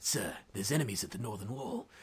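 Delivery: English tough-guy accent, laid on heavily. Showing the same audition line again, now in a Statham accent. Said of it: "with the accent".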